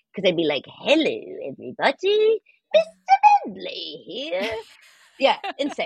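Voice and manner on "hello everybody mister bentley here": put-on little old lady voice, high and swooping. Voicing a male bulldog greeting everybody, in an old lady voice. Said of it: "It sounded like this old lady".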